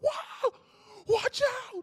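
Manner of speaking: put-on top-of-lungs scream. Retelling a near miss on the road, retelling a top-of-lungs scream. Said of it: "She screamed like at the top of her lungs".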